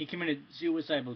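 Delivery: ordinary delivery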